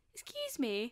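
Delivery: tiny, small, wee voice. Retelling how a woman behind the curtain spoke to them, in a small little voice. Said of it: "we hear this like really like little voice".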